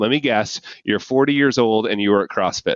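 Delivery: plain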